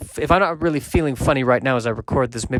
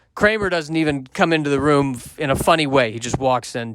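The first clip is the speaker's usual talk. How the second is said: normal talking voice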